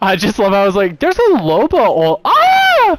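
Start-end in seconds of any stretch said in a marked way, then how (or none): 1.0-3.0 mock very slow, very high, swooping, drawn-out shriek. Playing a shooter game with a teammate, screaming a callout. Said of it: "I don't know why you're screaming".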